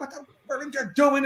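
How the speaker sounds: high, play-acted yelling, temper completely lost. Retelling how they lost it over the cut script pages, re-enacting the yell. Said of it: "I'm yelling, I'm yelling".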